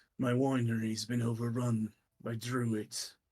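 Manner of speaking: put-on old man voice. Voicing a hunched old man greeting strangers: old man character voice. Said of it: "hunched over old man ... as he looks at you and goes".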